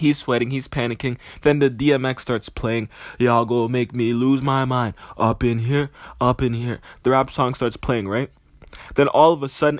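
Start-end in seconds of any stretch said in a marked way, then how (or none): none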